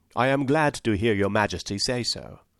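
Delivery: ordinary delivery, nothing marked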